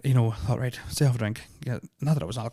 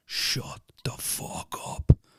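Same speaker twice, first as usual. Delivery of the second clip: low-pitched voice. Retelling words spoken one night without memory of them: imitating a real deep voice. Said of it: "You just spoke in a real deep voice going".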